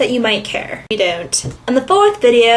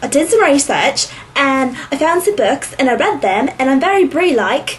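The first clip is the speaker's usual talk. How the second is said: put-on Valley Girl speech blended with an Australian accent. Speaker retelling Tony's video, voicing her: Valley Girl-Australian accent. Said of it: "It's hard to do the Valley Girl with that Australian".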